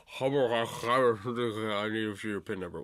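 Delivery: mock voice talking while eating. Imitating a phone agent who sounded like he was eating lunch: imitating someone talking while eating. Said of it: "sounded like he was eating his fucking lunch".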